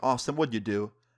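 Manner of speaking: ordinary delivery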